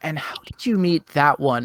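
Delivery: hushed whisper. Voicing a noblewoman leaning in at dinner: whispering noblewoman. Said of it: "she's gonna lean in and whisper to you".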